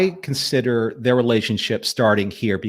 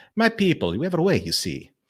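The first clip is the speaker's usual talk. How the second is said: Italian accent, pitched higher; 5 semitones higher, 3 dB quieter than usual. Trying out a character voice, the speaker does Lord Refa voice, Italian accent. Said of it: "It gets Italian".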